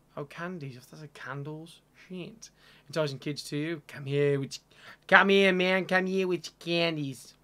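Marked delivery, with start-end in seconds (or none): 3.9-7.3 very loud, poor fake American accent. Playing a game and joking about enticing kids with candies: not very good American accent. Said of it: "That's a not very good American accent".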